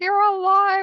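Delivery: very high, loud, overjoyed, excited cry. Retelling seeing a brother walk in alive, imitating own excited cry. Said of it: "I was so excited".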